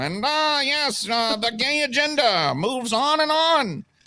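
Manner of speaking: very high, slow, pinched nasal voice. Mocking conservative pundits as all sounding alike: Ben Shapiro impression. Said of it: "Ben Shapiro".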